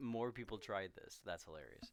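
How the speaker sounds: usual speaking voice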